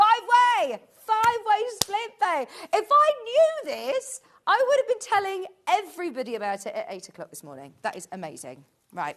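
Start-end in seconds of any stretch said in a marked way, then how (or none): 0.0-6.4 very high, swooping, thrilled excited screaming. Host revealing Hayley's five-way split pay, shouting excitedly. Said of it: "I will stop screaming and shouting about it now".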